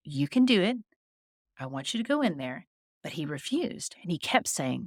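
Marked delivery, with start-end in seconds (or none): none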